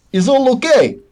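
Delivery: very high, badly faked Russian accent. As a guard putting his head around the door, very bad Russian accent. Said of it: "just speak it with a very bad accent".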